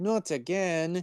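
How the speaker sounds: attempted French accent. Retelling what a woman said in a story, in an attempted French accent. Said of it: "I'm trying to like do a French accent".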